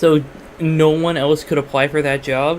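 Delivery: plain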